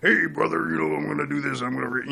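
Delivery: rough, creaky, growling tough-guy voice. Showing how a wrestler would talk tough: Hulk Hogan voice. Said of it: "Like a Hogan".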